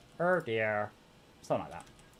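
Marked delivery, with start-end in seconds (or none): 0.2-0.9 bad attempt at a little cartoon alien voice. Trying a line in a voice they say they can't do: Marvin the Martian voice. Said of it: "I can't do Marvin's voice".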